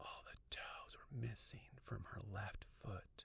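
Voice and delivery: hushed, breathy whisper right at the ear. Narrator, mouth close to the listener's ear: whispering. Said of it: "I whispered".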